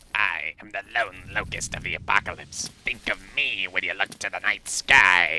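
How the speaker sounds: hushed put-on alien mantis voice. Quoting a line in a hushed Zorak voice. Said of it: "sounds like a hushed Zorak".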